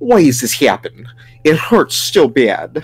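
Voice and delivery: put-on Russian accent. Performing a tortured captive's plea, in a Dracula-style Russian accent. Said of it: "How's your accent for Russian?".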